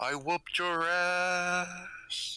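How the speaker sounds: high call sounding carried from afar, "ass" drawn out. The game master voices a figure heard far off, as Diklos's voice on the wind. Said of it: "the voice of Diklos on the wind".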